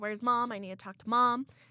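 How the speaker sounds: put-on crying. Retelling a call to dad asking for mom: retelling crying.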